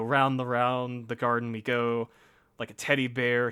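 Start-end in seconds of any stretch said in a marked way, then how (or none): none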